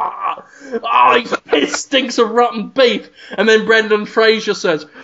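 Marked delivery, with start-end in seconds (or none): 0.0-3.1 put-on retching, gagging, disgusted voice. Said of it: "Deborah Messing just kind of gags a bit".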